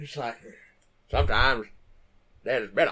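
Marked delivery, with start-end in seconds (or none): 1.1-2.9 put-on old-timer Maine accent. Imitating an old man from the movie: Maine accent. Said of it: "has the best main accent".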